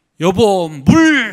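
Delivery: loud, slow, drawn-out, bossy, demanding voice.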